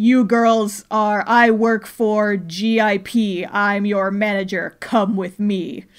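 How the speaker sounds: very slow, drawn-out, deep intimidating bass voice. Retelling a stranger approaching the girls, in a very deep voice. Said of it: "he's got like a very deep voice".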